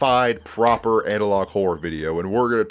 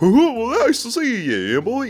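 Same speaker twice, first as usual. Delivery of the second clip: goofy higher voice, much slower; 14 semitones higher than usual. Mimicking the voice actor who played the Cat in the Hat: goofy Cat in the Hat voice. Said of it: "like that kind of like like goofy voice, but like a little higher pitch".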